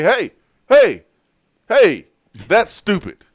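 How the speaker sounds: high, loud, calling-out voice.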